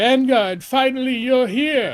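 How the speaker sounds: put-on high-pitched elderly man voice. Voicing the elder character while playing through a game: old man voice. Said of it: "he's old, so he sounds like that".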